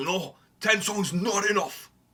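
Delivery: put-on Japanese accent. Imitating demanding Japanese buyers of an album: imitating a Japanese accent. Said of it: "that's my best Japanese accent".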